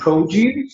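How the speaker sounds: produce with first-syllable stress, PRO.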